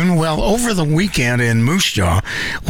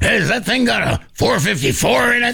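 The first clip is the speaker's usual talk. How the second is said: rough, rasping, gravelly voice with pitch going up; 7 semitones higher than usual. Describing a YouTube host who looks around junkyards, quoting him: Mike Hall impression. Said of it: "got a gravel voice".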